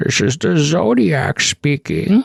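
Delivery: raspy put-on voice. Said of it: "doing the Bane voice as the Zodiac".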